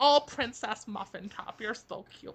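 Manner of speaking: put-on old lady voice. Joking with a friend about her future, doing an old lady obsessing over cats. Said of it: "You sounded kind of like an old lady obsessing over her cats".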